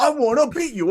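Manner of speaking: put-on promo yell. Describing a promo style, the speaker yells like Kevin Owens. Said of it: "in his tone of voice and saying bruv a lot, just yell".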